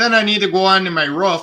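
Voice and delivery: put-on Wisconsin accent. Joking about how she would sound and an accent nobody could stand, do a mock Wisconsin accent. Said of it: "wouldn't be able to stand your accent".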